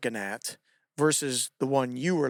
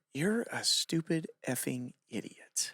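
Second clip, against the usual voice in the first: put-on smiling voice, quieter; 8 dB quieter than usual. Retelling what a coach said to a gymnast while smiling: imitating a coach's smiling tone. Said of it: "with this tone and this expression".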